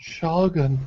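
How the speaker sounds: soft, urgent half-whisper under the breath. Narrating a scene where a woman says a single word: half-whispering. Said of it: "And she whispers".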